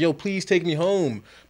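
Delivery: put-on tearful pleading voice. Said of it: "crying, like".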